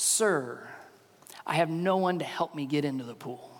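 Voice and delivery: acted, soft, hopeless, beaten-down, defeated voice. Acting out a man's reply about having no one to help: acting out a defeated voice. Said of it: "Do you hear the defeat in his voice?".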